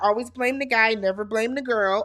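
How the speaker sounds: ordinary delivery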